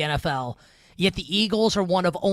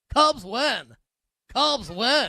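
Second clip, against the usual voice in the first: high, very slow broadcaster voice, each word stretched; 5 semitones higher than usual. Celebrating a Cubs win with a Harry Caray impersonation. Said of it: "my best Harry Carey impersonation".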